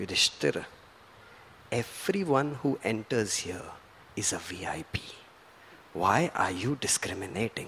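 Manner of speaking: barely-there, gentle, softest near-whisper, very quiet. Recalling a man holding him close and speaking to him, in the softest voice. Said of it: "in the softest of voice".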